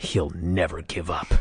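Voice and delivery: acted, contemptuous, utterly disdainful, sure brush-off. Retelling a commentator's reply to a wrestler's taunt: imitating David Crockett's utter disdain. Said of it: "with utter disdain in his voice".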